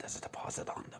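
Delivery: secretive hushed whisper, very quiet, barely audible. Retelling how the dad whispered into a man's ear: imitating a whisper. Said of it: "whispers into your man's ear and says".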